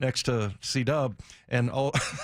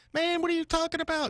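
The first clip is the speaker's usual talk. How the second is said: very high, pushed-up, upset voice. Retelling how a teammate sounded when upset: imitating Kurt Warner's high upset voice. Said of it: "his voice would go, like, five octaves higher".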